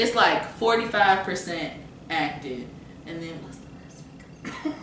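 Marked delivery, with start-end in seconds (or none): 3.1-4.8 soft whisper, said as an aside. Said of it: "Why you keep whispering?".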